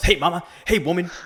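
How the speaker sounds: loud, high-pitched yell hollered out. Retelling a wrestling show where Mister T shows up: imitating Mister T yelling. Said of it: "he yells".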